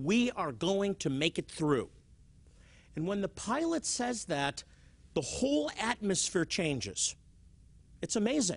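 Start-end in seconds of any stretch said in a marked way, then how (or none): none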